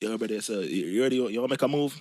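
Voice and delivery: mock rapid Jamaican speech. Imitating a friend who talks fast: imitating a friend's fast Jamaican talk. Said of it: "He probably say some shit like".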